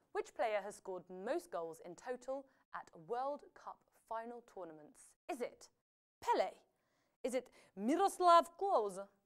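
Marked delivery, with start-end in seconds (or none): 7.2-9.0 put-on Polish accent. Reading out a quiz answer option in a polish accent. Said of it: "I had said that in my Polish, yeah, Polish accent".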